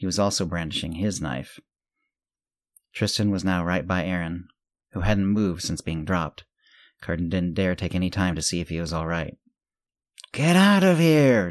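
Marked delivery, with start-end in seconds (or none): 10.3-11.5 shrill, very high, very slow, drawn-out scream. Tristan, standing by Aaron as men with knives close in, screaming at them. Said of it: "Tristan screamed at them".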